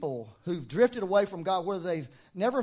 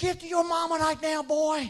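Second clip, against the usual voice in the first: mock, shrill, very high yelling shout; 9 semitones higher than usual. Retelling calling a boy back to his mama: imitating own yell. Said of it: "And I'm yelling".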